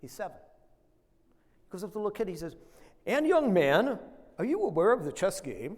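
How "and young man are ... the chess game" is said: loud, vintage broadcast-announcer voice. Retelling the announcer asking a seven-year-old about the chess game, announcer voice. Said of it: "who they all used to talk like this".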